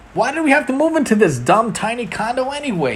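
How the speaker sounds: sudden, loud blurt, very high. A boy speaks to no one in particular after his mother moves on, blurted out. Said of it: "he blurted out to no one in particular".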